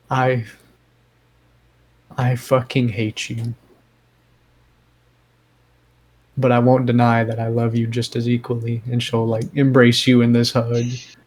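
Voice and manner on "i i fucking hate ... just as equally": quiet, private half-whisper. Narrating a scene, the storyteller voices a woman speaking only to you, half-whispering. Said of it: "whispers in a voice really only you can hear".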